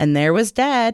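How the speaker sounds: ordinary delivery, nothing marked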